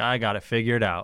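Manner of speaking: ordinary talk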